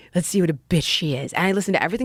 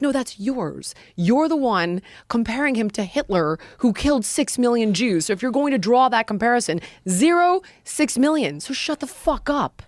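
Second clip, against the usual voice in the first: mock raised voice, higher; 7 semitones higher than usual. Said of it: "it raised my voice a little bit".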